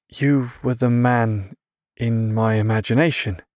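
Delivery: tentative, unsure, hesitant and slow. Narrator reads a boy answering a group's leader, hesitant. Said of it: "Hesitantly, he answered".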